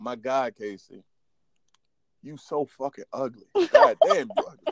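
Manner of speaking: taunting, laughing, swooping delivery. Retelling what a girl from school would say to him, imitating someone laughing while insulting. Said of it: "She would tell me that shit, like, laughing".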